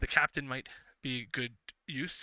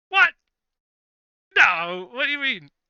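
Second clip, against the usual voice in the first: put-on very loud, shrill, high, swooping drunken bluster; 12 semitones higher, 15 dB louder than usual. The captain, half in the bag, is told a dragon is coming: drunk captain voice. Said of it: "It looks like he's kind of half in the bag right now, / He is currently using a dagger to clean out his toenails. He's got his boots off, and he's got his feet kicked up on a table, just on a barrel".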